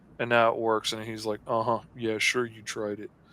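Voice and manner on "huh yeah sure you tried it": quiet, mock, condescending, smug tone. Retelling what the IT guy said after a failed fix: imitating a smug IT guy. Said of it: "that smug little I T guy's like".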